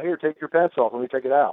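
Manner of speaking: ordinary delivery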